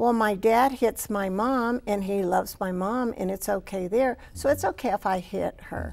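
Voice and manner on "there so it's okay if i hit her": normal talking voice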